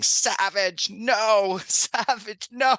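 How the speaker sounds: acted shrill scream, very high-pitched and loud. Telling a player how he screamed at him from the bench, retelling the scream. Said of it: "I was screaming from the bench".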